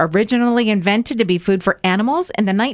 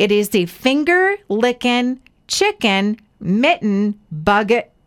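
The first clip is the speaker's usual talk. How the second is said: careful, deliberate, word-by-word, very slow. Facing a tongue-twister item name, the speaker says it very slowly. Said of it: "so I'm going to say it very slowly".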